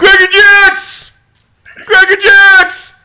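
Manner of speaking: put-on cheering fan yell. Imitating a diehard baseball fan at the first pitch: imitating a cheering diehard fan. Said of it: "you'd be the first guy standing there going".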